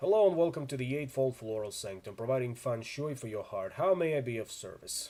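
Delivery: deadpan, utterly bored, flat monotone. Narrating the game, the speaker voices the troll greeting you: flat monotone. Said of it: "it is in a flat monotone".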